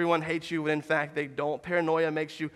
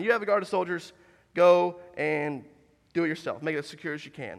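ordinary talk

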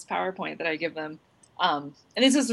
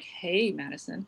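put-on creepy tone, quieter; 5 dB quieter than usual. Retelling getting uncomfortably close to a student: mock creepy voice. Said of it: "good creepy moment".

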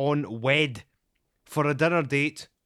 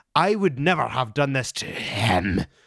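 spooky, menacing put-on storytelling voice; 3 semitones lower than usual. Reading a woman's all-caps message aloud in a scary voice for caps lock. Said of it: "that's why you keep doing that scary voice".

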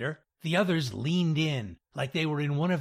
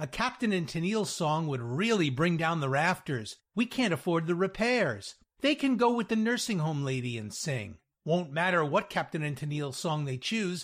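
usual speaking voice

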